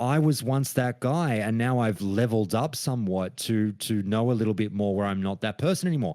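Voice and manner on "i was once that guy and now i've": usual speaking voice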